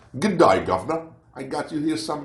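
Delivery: stock put-on British accent, pitched high. Looking at a bag of chips from the UK, slipping into a mock British accent. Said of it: "It's started with the British".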